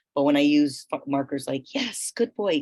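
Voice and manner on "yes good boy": high-pitched, excited, bright and upbeat. Like someone thrilled that their dog just did exactly the right thing, pitching the voice up high and bright to reward it. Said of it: "it's firm".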